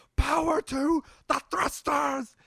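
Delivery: shrill, all-out, very high, loud ragged scream. Retelling a favorite movie moment with Christopher Lloyd: imitating Christopher Lloyd screaming. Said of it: "really fucking screaming".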